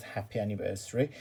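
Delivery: normal talking voice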